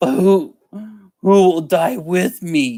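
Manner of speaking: acted high, slow, tearful crying plea. Retelling how a man who followed him started crying: imitating someone crying. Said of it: "and he starts crying".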